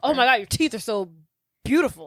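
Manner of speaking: rushed, desperate, gushing flattering tone. Retelling a film scene, imitating Donkey complimenting the dragon: imitating Donkey complimenting. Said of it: "He's like".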